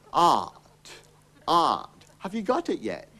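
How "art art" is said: Cockney 'art' for 'out', lower. Showing a learner how to pronounce the word: saying 'out' as 'art'. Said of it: "pronounce it out with an R in it".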